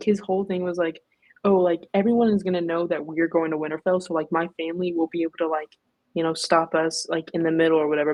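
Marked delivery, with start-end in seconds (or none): none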